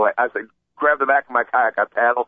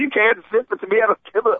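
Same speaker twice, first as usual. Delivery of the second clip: mock screaming, higher and faster; 11 semitones higher than usual. Retelling screaming at a man who blocked the group's way: reenacting own screaming. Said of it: "And I started screaming".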